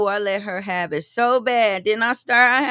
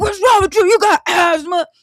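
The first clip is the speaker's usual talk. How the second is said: loud, high, barking drill-sergeant yell; 6 semitones higher, 8 dB louder than usual. Recalling coughing on a run, speaker retells a drill sergeant's yell at him. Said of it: "he yelling at me".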